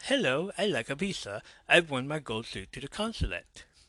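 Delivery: mocking, put-on British accent. Speaker makes fun of another woman's consulate visit, in a mocking british accent. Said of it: "in a British accent".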